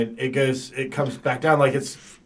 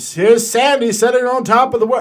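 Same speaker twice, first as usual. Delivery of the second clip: put-on very high 1920s old-time radio announcer voice; 10 semitones higher, 9 dB louder than usual. Retelling the last thing he said, in a 1920s radio broadcaster voice. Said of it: "I make him sound like a nineteen twenties radio broadcaster".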